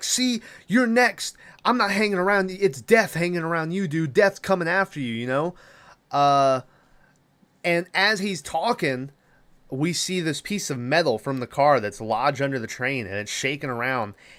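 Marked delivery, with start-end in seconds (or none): 0.0-5.6 mocking, accusing, put-on yell, pitched up. Retelling a movie scene, yelling at Carter: imitating Seann William Scott yelling. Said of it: "starts yelling at Carter, and he's like".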